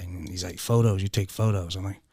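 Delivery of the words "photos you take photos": loud, barking yell. Retelling a guard's accusation during an interrogation: imitating a guard yelling. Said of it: "he's just yelling at me".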